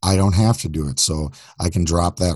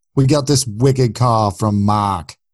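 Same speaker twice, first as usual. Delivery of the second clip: thick, put-on Boston accent; 4 semitones higher, 4 dB louder than usual. Asked to introduce a caller on the show, in a boston accent. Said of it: "introduce our call from Mark in a Boston accent".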